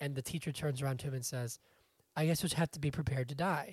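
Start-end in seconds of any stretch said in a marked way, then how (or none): 2.2-3.7 deadpan, plainly stated, matter-of-fact, as if obvious. Retelling a teacher's answer to a student in a commercial: imitating matter-of-fact delivery. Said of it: "says it, like, very, like, a matter-of-factly".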